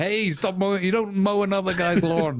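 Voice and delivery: high, playful mock shout.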